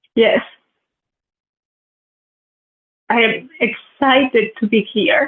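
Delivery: crying, in tears. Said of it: "Is that why you're crying?".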